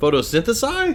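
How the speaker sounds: very high, loud, squeaky, baffled and startled.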